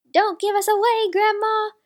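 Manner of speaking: crying out loudly, high-pitched. A child hiding under the table calls out to grandma at the door; crying out loudly. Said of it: "cried Nikki loudly".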